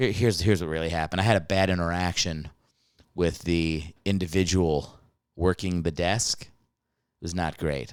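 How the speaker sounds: hushed, confiding voice. Telling listeners about a bad interaction with a hotel desk worker: lowered voice. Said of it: "I'm lowering my voice".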